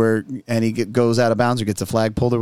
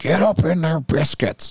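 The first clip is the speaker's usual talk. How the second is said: put-on yelling, higher pitched; 5 semitones higher than usual. Retelling how the other coach yelled at his defense: imitating a coach yelling. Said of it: "the other coach was yelling".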